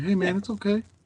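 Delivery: easy, cool, soothing tone. Retelling what they say to the crying baby: imitating own calm, cool voice. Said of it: "come back with a calm, cool voice".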